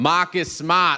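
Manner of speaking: said in a Boston accent, high-pitched. Podcast host welcoming a Celtics player by name, in a Boston accent. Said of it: "I had to say your name that way because it's the only way to say it in Boston".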